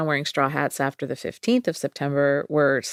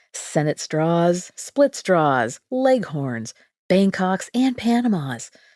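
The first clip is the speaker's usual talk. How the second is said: polished advert pitchman announcer delivery; 3 semitones higher than usual. The speaker shows off their ad voice, reading an advertisement: ad announcer voice. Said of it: "So that was my ad voice".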